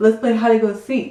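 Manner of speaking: ordinary talk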